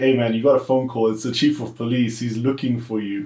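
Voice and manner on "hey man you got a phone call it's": usual speaking voice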